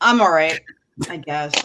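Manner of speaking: deflated, downbeat, flat, unenthusiastic tone. Answering another speaker who asks how they are: flat, unenthusiastic. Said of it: "A level of enthusiasm".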